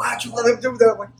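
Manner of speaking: very high-pitched, blaming scream. Retelling his little brother screaming at him after he got choked, retelling a scream. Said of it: "he's screaming at me".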